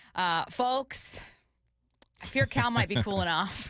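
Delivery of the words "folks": folks with the l heavily stressed. Retelling what he said to his audience before a player's at-bat, stressing the l in folks. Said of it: "emphasis on the L".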